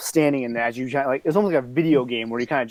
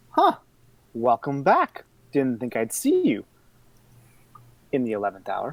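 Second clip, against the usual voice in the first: put-on cackling old woman voice with swooping pitch. A game master voices an old lady greeting a player's character, cackly old lady voice. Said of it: "This old, cackly lady's voice".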